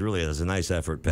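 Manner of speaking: ordinary delivery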